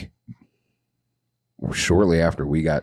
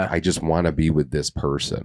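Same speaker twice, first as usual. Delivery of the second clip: ordinary talk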